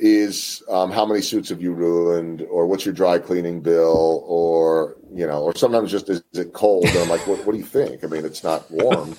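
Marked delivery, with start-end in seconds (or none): 7.3-9.2 put-on sarcastic tone without any malice. Recalling answering people who ask if it is cold, retelling a sarcastic reply. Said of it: "I say that with just pure sarcasm".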